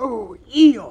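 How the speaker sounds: very high, loud, worried, anxious cry. Christopher Robin finds Eeyore under the heap, crying out anxiously. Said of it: "cried Christopher Robin".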